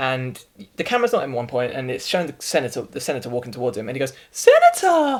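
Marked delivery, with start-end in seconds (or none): 4.3-5.2 very high-pitched, shrill, loud shout. Retelling a film scene where the character greets a senator: high-pitched Lex Luthor voice. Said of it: "his voice goes so high-pitched".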